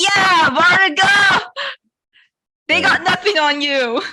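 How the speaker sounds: booming, drawn-out, high-pitched cheer. A player speaks as Lonnie cheering on Vartiga, in Lonnie's booming voice. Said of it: "booming voice thing with that".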